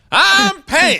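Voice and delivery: very high-pitched South Georgia southern drawl. Retelling how a man introduced himself, the speaker says it in a South Georgia accent. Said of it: "he's from South Georgia".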